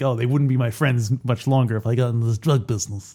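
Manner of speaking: ordinary talk, nothing marked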